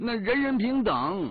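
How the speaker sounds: high, loud mock Henan accent. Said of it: "我学着班长的口音回答他说".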